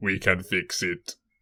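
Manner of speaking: measured, slow, deliberate dubbed-over voice. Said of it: "he's dubbed in by Arnold Schwarzenegger".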